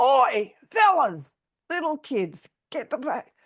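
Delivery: commanding parade-ground sergeant major voice. Retelling telling off people behind them, the speaker uses a Sergeant Major voice. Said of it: "Sergeant Major voice".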